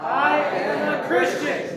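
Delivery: bold, convinced, very high-pitched delivery. Showing the group how to say it one more time, a bold declaration. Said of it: "Say it with boldness like you believe it".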